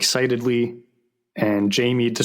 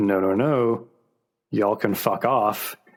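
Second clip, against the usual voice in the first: fake, put-on American accent. Retelling a scene, quoting the rocket captain, in a fake american accent. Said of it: "the guy with the the fake American accent is like".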